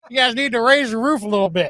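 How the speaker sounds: country-radio DJ accent. Trying out fun voices for a country station: country-station voice. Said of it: "Maybe on the country station".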